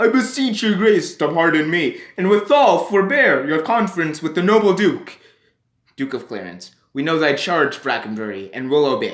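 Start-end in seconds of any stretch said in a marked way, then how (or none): 0.0-5.2 silly, dim-witted, high-pitched voice. Reading a play's parts aloud, voicing Sir Robert Brackenbury, stupid Brackenbury voice. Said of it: "I gave him a stupid voice".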